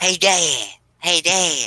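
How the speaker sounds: high, slow sing-song, each word drawn out, swooping. Doing voices from King of the Hill: Bobby Hill voice. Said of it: "voices I can do from King of the Hill is, uh, Bobby".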